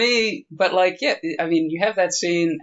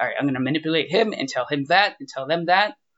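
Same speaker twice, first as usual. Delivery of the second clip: ordinary talk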